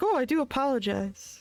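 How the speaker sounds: sarcastic, dragged-out, very slow. Retelling another speaker's line: imitating a sarcastic apology. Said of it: "That was such a sarcastic".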